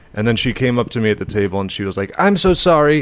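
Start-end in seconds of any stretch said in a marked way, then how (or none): 2.2-3.0 strange, kind of weirdly high voice. Retelling what a woman said on coming up to the table; imitating a weirdly high voice. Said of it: "her voice was like kind of weirdly high".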